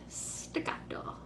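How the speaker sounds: whispered staccato in the Italian way. Showing students how an italian says the word: italian pronunciation. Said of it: "Unless you're Italian".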